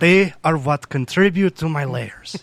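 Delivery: strange, hard-to-place fake accent, vaguely Greek. Joking around for the guys, in a weird put-on accent. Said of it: "I don't know what that accent was".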